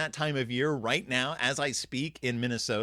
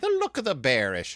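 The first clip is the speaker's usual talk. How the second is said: put-on Irish accent. Repeating a bear pun as a joke: put-on Irish accent. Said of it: "my Irish accent".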